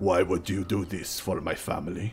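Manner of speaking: put-on stern, gruff old father voice.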